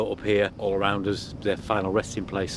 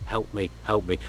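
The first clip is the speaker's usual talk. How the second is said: mock-fearful, much quieter, slower, pleading frightened voice. Recounting how his voice suddenly changed, the speaker quotes him: retelling a quiet fearful plea. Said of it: "spoke in a much quieter voice ... fearful".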